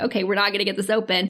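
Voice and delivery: ordinary talk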